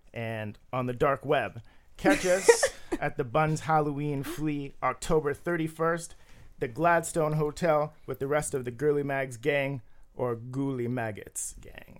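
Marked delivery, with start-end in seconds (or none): 10.1-12.0 hushed, soft, sinister, creepy vampire voice. Podcast speaker signs off plugging a Halloween event: Nosferatu impression. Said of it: "That was a really great Nosferatu".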